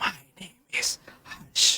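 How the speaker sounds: very quiet, airy, breathy whisper. Lecturer showing how a patient with abductor dysphonia says their name, breathy and whispering. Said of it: "the patient will tell you in a breathy voice or the whispering quality".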